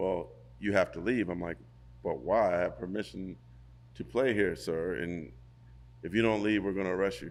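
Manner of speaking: ordinary talk, nothing marked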